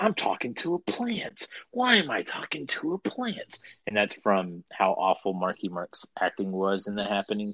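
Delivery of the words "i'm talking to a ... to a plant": very high, squeezed-up movie-star voice. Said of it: "in the [name] voice".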